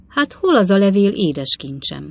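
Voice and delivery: plain reading voice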